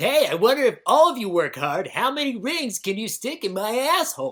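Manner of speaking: high, silly, goofy clownish voice. In a fill-in-the-blank game, voicing what Sonic wondered, in a clownish Sonic voice. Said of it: "You make him sound like a clown".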